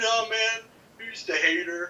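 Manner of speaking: very high, slow, squeaky, dragged-out voice. Retelling what a friend said when disagreeing: imitating Reflex. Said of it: "He's like".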